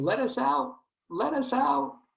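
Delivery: very high, drawn-out muffled screaming, acted out. Pretending ice cream in the freezer calls out: mock muffled screaming as Ben and Jerry. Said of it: "And they're screaming".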